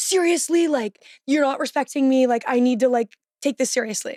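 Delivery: angry, complaining tone. Retelling a refused visit request: imitating someone getting mad. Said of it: "he got mad at me again".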